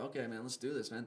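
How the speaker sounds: usual speaking voice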